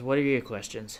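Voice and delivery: very bored, utterly uninterested voice. A squid-faced monstrosity looks at you and asks, very bored voice. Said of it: "In a very bored voice".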